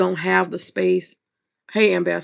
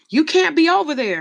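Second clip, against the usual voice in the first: mock shout as if from afar, raised and high; 9 semitones higher, 4 dB louder than usual. Retelling how a man at a plantation yelled at the speaker: imitating a man yelling. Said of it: "you can hear him yelling".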